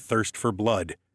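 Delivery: ordinary delivery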